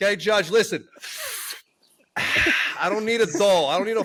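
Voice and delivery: heavy, slow, thick Italian New York drawl. Speaker voicing a four-year-old talking to a judge, thick italian new york accent. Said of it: "the four-year-old has a very thick Italian New York accent".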